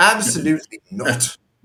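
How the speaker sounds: put-on English accent, British accent. Retelling a British guy's reply overheard in Mercadona: imitating a British accent. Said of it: "The other guy said with his accent".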